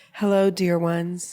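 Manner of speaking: calm, gentle, comforting, soothing relaxation-tape voice. Describing a relaxing yoga video for women, imitating a soothing voice. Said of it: "she just talks in this soothing voice".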